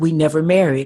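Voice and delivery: ordinary talk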